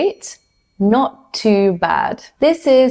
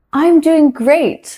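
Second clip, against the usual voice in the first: bright, cheerful, upbeat, higher-pitched voice; 7 semitones higher than usual. Showing a learner how to answer a greeting: cheerful and upbeat. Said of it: "say it in a cheerful way and in an upbeat energy".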